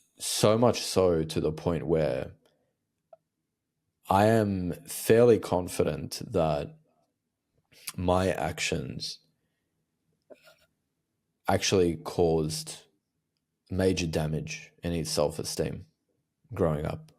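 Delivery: fighting back tears, voice held together. Speaker making a painful admission to listeners, holding back tears. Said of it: "I'm holding back tears saying this".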